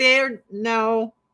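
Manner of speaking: usual speaking voice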